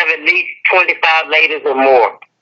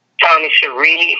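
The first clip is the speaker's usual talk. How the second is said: normal talking voice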